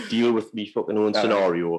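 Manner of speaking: ordinary delivery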